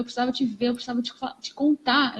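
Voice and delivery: ordinary talk, nothing marked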